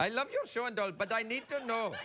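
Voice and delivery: bad, unconvincing put-on Indian accent. Speaking to a show's host Craig, a bad attempt at a Finnish accent. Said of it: "It's not very Finnish accent".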